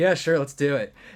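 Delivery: put-on annoyed voice. Retelling a kid's reply to the producer while recording lines, mock-annoyed reply. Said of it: "And Roman's just annoyed".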